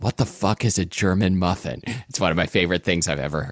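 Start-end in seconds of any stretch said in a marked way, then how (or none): 0.0-1.8 put-on whisper. Retelling a TV scene where a character whispers a line: imitating Ron Swanson whispering.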